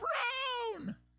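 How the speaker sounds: very high, screamed delivery.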